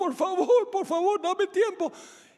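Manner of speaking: very high, crying, pleading voice. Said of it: "sigue clamando y llorando".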